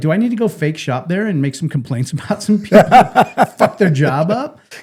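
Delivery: laughing, playful mock tone. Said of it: "I was like".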